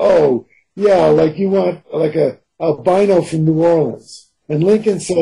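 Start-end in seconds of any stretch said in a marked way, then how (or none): 0.0-4.3 dripping, very sarcastic, mocking tone. Retelling an irritated reply to a co-writer: retelling own sarcastic remark. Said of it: "I said very sarcastically".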